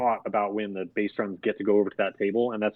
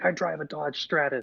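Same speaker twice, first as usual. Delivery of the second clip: put-on yell; 6 semitones higher, 5 dB quieter than usual. Retelling a comedy sketch's dinner scene: imitating Will Ferrell yelling. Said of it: "he yells out".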